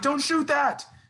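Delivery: very high screamed voice. Recalling watching a late three-point shot with dad, retelling a scream. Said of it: "I was screaming like".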